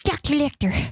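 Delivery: speech with a slight lisp. Imitating Jodie Foster saying Doctor Lecter: Jodie Foster voice with a lisp. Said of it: "it has a little bit of a lisp to it".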